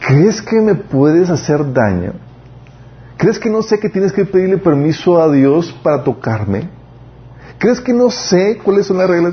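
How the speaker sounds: put-on words broken up by laughter, pitched high. Recounting what she told someone back then, retelling speaking through laughter. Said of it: "yo le decía entre risas".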